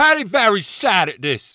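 very high mock British yelling. Teasing a speaker about his accent, mock-yelling like Paddy in British. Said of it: "It's only when I yell and talk in third person".

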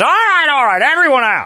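acted, very high, loud excited call. Imitating Brett at the gun shop, getting excited: excitedly imitating Brett. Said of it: "Gets excited. He sounds like Donner".

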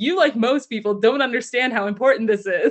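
ordinary talk

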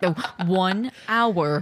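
robotic text-to-speech voice. Speaker imagines a recorded hourly voice line, done in the Microsoft Sam voice. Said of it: "like the fucking Microsoft Sam voice".

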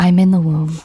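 ASMR-style reading voice, close to the mic. Reading a regression story aloud to another speaker: ASMR reading voice. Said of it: "I'm gonna read it in, like, a, maybe an A S M R".

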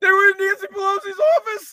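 shrill, very high and loud scornful tone. Mocking a politician's announcement of a moment of silence: imitating Hakeem Jeffries' tone of voice. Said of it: "And his tone of voice like".

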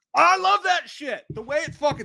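shrill, very high screaming. Reacting excitedly to a death scene in a movie: screaming. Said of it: "sorry for screaming".

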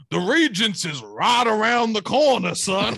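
put-on Southern woman's voice with Southern accent. Retelling what a woman said to him at school, imitating a southern woman. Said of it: "She was just this big Southern woman".

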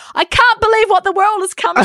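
put-on booming, very high-pitched, shrill outcry. Retelling a remark said very out loud in a theater, re-enacting it very loud. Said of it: "very out loud saying".

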